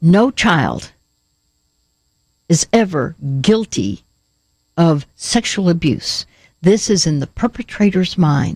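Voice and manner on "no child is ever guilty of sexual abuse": strong, firm voice, slow and swooping. Speaking to listeners who blame themselves, deliberately finding a strong voice. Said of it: "I'm going to try to get my strong voice".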